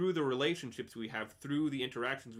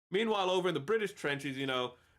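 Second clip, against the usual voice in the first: usual speaking voice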